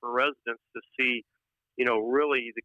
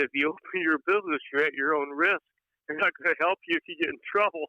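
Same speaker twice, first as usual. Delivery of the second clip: words broken up by laughter throughout; 4 semitones higher than usual. Quoting the opposing county chairman's words, laughing while talking. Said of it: "Sorry, I'm laughing".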